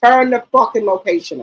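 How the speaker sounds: mock stern, firm, no-nonsense tone. A parent quoting what they tell their kids about location sharing, retelling a firm demand. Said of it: "I get firm".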